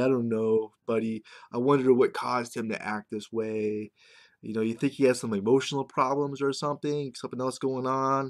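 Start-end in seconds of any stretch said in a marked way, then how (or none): none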